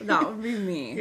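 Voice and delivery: normal talking voice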